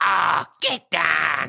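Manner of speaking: put-on booming, creaky, loud, rough angry grandma voice. Imitating the grandma yelling at the dogs as she walks in: imitating angry grandma. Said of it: "she's like".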